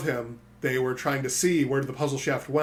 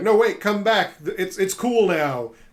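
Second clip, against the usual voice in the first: mock hollered yell, high and stretched long; 6 semitones higher, 5 dB louder than usual. Retelling calling after fleeing enemies who didn't know his voice: retelling a yell. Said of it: "I just yelled".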